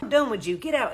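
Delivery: plain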